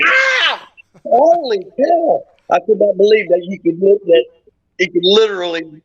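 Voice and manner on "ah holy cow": mock very high, wild, swooping childlike scream. Telling how he was held in an armbar, retelling a scream like a 10-year-old. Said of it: "I screamed like a 10-year-old".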